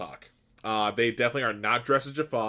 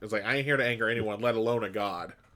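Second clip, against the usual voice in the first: ordinary talk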